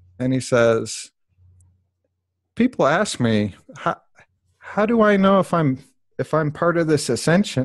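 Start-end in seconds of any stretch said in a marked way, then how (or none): 2.6-7.7 choked-up, pitched-up voice catching in the throat. Quoting a video they found powerful, the speaker talks while getting choked up. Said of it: "I'm getting all choked up just talking about this".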